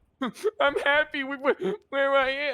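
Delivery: acted teary voice. Mocking the other speaker's claim to be happy, imitating someone about to cry. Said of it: "You sound like you're gonna fucking cry".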